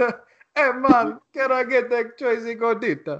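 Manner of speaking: put-on Jamaican accent. Retelling a drive-thru story, imitating Kofi's Jamaican accent. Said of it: "You sound like fucking the Kofi at the Taco Bell drive-thru story".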